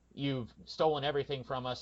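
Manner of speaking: normal talking voice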